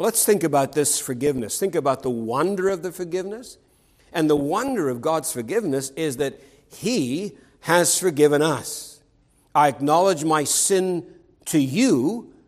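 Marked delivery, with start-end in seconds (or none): 11.6-12.2 emphatic stress on the word you. Speaker quotes a verse aloud, stress on 'you'. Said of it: "emphasis on the you".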